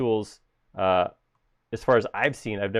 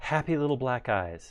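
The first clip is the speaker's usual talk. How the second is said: slow, easy, drawn-out relaxed voice; 3 semitones higher, 4 dB quieter than usual. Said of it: "My Bob Ross is sounding".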